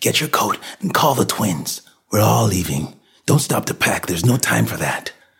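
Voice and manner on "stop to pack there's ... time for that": ordinary delivery, nothing marked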